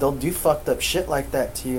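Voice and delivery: ordinary talk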